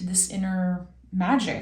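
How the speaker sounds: ordinary delivery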